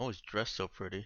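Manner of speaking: quiet, muttered under the breath. As another character walks over, her character mutters under her breath. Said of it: "kind of under her breath".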